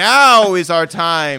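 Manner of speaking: very loud, rousing, table-banging delivery. Teasing the other speaker for sounding like a speechgiver, mock rousing speech. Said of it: "like you're about to like bang on the table and be like".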